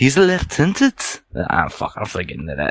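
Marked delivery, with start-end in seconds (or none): 0.0-1.2 higher-pitched Liverpool accent. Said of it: "like more Liverpoolish".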